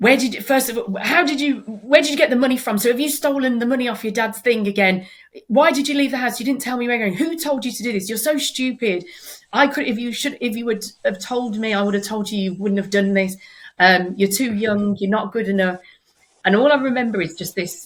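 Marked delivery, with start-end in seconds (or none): 0.0-15.8 furious, angry, scolding shouted rant. Telling a story, the speaker retells how she was shouting at them angrily. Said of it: "She started shouting at me and she said".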